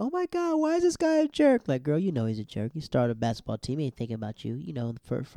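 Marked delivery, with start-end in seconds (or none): 0.0-1.7 very high, shrill yelled outburst. Retelling a show scene where a character yells: imitating someone yelling. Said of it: "she yells off".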